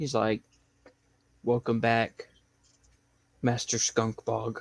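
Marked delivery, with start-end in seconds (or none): 1.4-4.6 even, soft, flat, mechanical robot voice. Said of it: "he sounds like C three P O".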